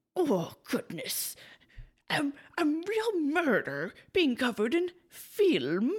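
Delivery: put-on upper-class British monocle voice, high, swooping. Discussing a film, the speaker voices a reaction as a British man with a monocle. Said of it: "my best, like, British man with a monocle impersonation".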